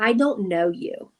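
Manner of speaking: put-on slow, very clear, deliberate enunciation. Retelling how a young girl answered a stranger: imitating a loud, very clear voice. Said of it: "Very, very clear and very loudly".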